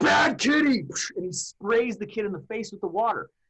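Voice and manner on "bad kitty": shrill, loud, high screamed scolding. Recalling a teacher spraying a student with water, imitating him screaming. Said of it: "he screams".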